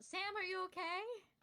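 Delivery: loud, high-pitched shout. Calling out in character to an injured ally: yelling out. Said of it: "I'm gonna yell out".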